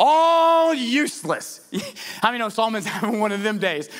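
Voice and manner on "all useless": high, slow, frustrated groan. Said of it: "Can you hear the frustration in Solomon's voice".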